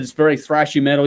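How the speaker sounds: ordinary delivery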